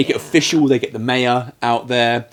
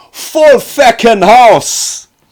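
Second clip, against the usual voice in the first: very slow, thrilled, loud, swooping Irish exclamation; 11 semitones higher, 8 dB louder than usual. Quoting Irish Mick's excited poker call in the film: excited Irish Mick voice. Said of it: "That's how we Irish say it properly when we're excited".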